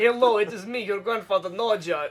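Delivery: mock Russian accent, put-on voice. On a podcast, doing the voice the others just described, mock Russian accent. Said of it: "that- that's the voice".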